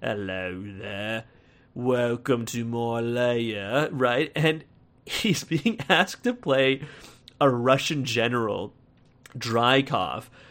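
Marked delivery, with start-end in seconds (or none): 0.0-3.9 put-on gentle old-fashioned English accent. Showing what an actor cast as a Russian general sounds like, in Ray Winstone's old-timey English accent. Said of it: "the old-timey English accent".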